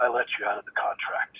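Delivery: soft, quiet, mellow, almost whispered. Recounting the last thing a man said on the phone, retelling in quiet, mellow voice. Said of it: "in a quiet, mellow voice".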